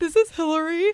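acted-out crying, very high, tearful voice. Retelling leaving a message for the doctor's nurse: imitating own crying voice. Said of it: "I'm just crying in it".

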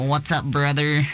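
put-on Southern US accent. Describing how British people mimic American accents: southern American accent. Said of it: "do the really southern one".

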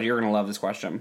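ordinary delivery

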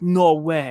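ordinary talk

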